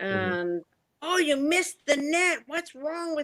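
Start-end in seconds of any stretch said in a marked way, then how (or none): 1.0-3.3 acted-out, high, frustrated hollering. Referee recounting what a parent yells during a game, retelling a yelling parent. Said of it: "you can hear a parent especially yelling".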